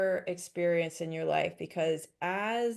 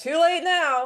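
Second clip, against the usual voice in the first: very high, loud, mocking cackle of glee; 10 semitones higher, 9 dB louder than usual. Retelling what the other voice on one shoulder said, retelling a cackling voice. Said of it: "cackling and laughing and going".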